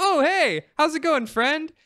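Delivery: totally chill, breezy, very high-pitched tone. Retelling how Solaire greets the player: imitating Solaire, totally chill. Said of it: "Solaire is just, like, totally chill".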